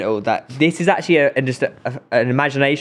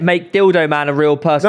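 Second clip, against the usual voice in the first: ordinary talk, nothing marked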